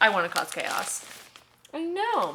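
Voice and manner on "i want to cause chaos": ordinary talk, nothing marked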